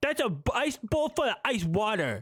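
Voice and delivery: put-on high, cutesy baby-talk voice. Mocking a TikTok reactor's way of talking: imitating her baby talk. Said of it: "every one of her TikTok reactions is baby talk".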